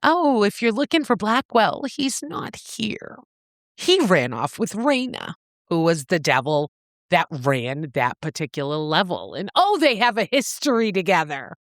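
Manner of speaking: ordinary talk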